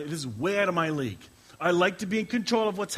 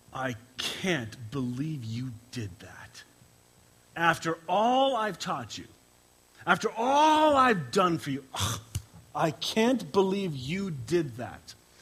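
put-on reproachful tone full of disgust and disappointment. The speaker imagines God looking at you, voicing a mock-disgusted God. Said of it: "looking at you with disgust and going".

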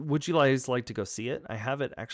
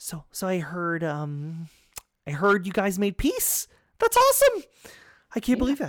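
thrilled, eager, excited burst, high and rising; 8 semitones higher, 5 dB louder than usual. Voicing Hans, who runs up to the group: excited. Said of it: "he's so excited".

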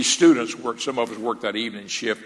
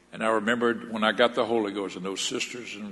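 usual speaking voice

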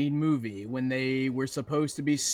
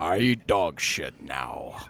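very low, deep heroic robot voice; 9 semitones lower than usual. Asked to do the dog's first line in a robot leader's voice, Optimus Prime voice. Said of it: "The dog's first line in Optimus's voice".

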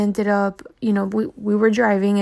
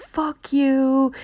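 mock screamed, pitched-up yelling; 5 semitones higher than usual. Retelling what parents in a car yelled at kids holding posters, retelling screaming. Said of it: "they were screaming like".

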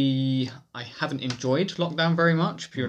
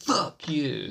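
mock forceful, emphatic cursing, words hit hard; 3 semitones higher than usual. Recalling being cut up at traffic lights, retelling a forceful curse. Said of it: "Really put some emphasis behind it".

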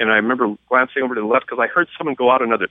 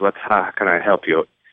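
put-on heavy German accent, much lower; 5 semitones lower than usual. Speaker quotes a man behind a desk greeting them, in a heavy German accent. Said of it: "he's got this heavy Accent".

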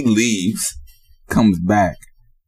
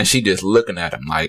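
ordinary delivery

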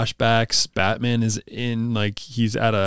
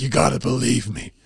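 weird, creaky, rough put-on voice. Retelling a scene with Batman locked up in a straitjacket, weird Batman voice. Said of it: "That was a weird voice".

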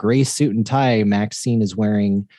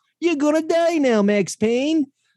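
very high, put-on stock video-game villain voice. Describing how the game's characters talked, imitating a game character's voice. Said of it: "kind of a voice".

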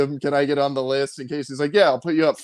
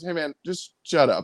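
normal talking voice

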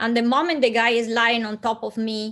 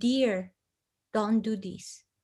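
soft, firm yet very gentle delivery; 6 dB quieter than usual. Recounting what the speaker said to a man about to assault someone: retelling a strong but gentle voice. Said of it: "with this strong but very gentle voice".

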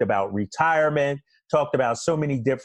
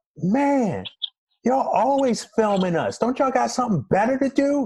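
put-on shouted yell, pitched very high; 10 semitones higher than usual. Retelling a remark yelled at practice about filming: imitating Kevin Garnett yelling. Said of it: "K G yells out".

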